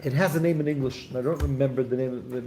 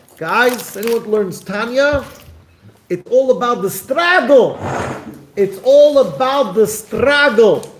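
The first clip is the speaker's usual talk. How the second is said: loud, slow put-on Russian accent; 9 semitones higher, 11 dB louder than usual. Retelling what a teacher once told the students: imitating a teacher's Russian accent. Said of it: "had a Russian accent and said".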